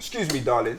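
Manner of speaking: imitated London accent. Retelling asking directions in New York: imitating his own London accent. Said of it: "y'all talk funny".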